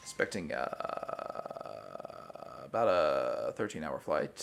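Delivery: airline pilot announcement voice. Continuing the vocal fry bit as a pilot announcing a flight: vocal-fry airline pilot voice. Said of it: "an airline pilot".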